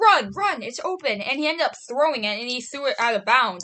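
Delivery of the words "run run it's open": high, drawn-out screaming yell. Retelling telling the quarterback to run: retelling own screaming. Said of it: "I was literally screaming".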